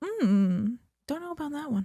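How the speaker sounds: quiet little whisper. Describing how their intuition talks, the speaker voices it: quiet little whisper. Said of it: "That's what my intuition personally sounds like".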